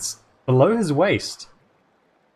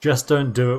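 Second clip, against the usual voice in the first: ordinary delivery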